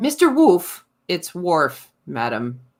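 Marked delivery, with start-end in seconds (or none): 1.1-2.6 mock low, flat, bone-dry, expressionless deadpan. Recalling her exchanges with Worf, quoting his reply: mock-deadpan Worf impression. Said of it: "Just so deadpan".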